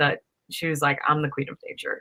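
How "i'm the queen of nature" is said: hushed, soft, breathy whisper under the breath. Retelling a line a child said during a science lesson: imitating a whisper. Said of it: "whispered under her breath".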